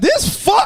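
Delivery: high, loud, pissed-off angry outburst. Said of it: "especially if somebody pissed me off".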